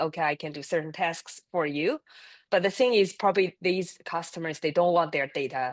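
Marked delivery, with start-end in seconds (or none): none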